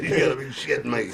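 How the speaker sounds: ordinary delivery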